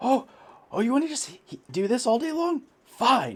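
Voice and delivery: shrill, full-volume, very high snarling yell. Voicing a creature that keeps stabbing at a hero: snarling and yelling. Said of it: "snarls and yells in your face".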